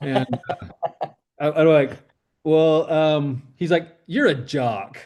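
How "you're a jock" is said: mimicked, mock-disdainful tone. Speaker retelling what a guy told him about school groups, imitating a disdainful tone. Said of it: "he like says it with like this like disdain in his voice".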